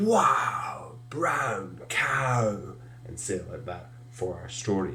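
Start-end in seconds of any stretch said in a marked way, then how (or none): 0.0-2.6 astonished, awestruck, lifted exclamation. Teaching a story's action line, said really surprised. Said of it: "It's about being really surprised at the very large cow".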